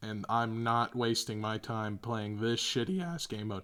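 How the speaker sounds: voice cracking and breaking partway through. Complaining about a game mode in Destiny 2, voice cracking. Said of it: "voice crack there".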